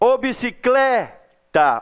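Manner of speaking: bicicleta called out with stress on clé. Pretending to call someone to find the stressed syllable: calling out, stress on clé. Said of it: "finge que você está chamando alguém ... o clé é a sílaba mais forte".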